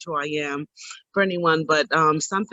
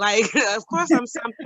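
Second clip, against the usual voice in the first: ordinary delivery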